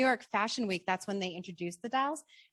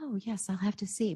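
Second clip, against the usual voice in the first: put-on, polished, businesslike professional voice. Recalling answering American Girl's call asking her to author the book, put-on businesslike voice. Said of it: "in my most business-like voice".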